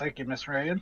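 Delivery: put-on Southern American drawl accent. Voicing a character who thanks someone: Southern accent. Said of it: "I just go Southern when I voice Warforged".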